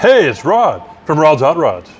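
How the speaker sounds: swooping radio announcer voice. Show host trying out a voice for a self-introduction, attempted radio announcer voice. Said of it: "It's not a radio voice, sorry. I tried".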